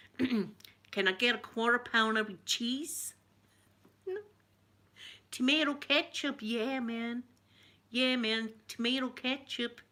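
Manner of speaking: slow, best-effort put-on American accent. Showing viewers an attempt at an American accent: attempted American accent. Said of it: "a kinda an American ac-".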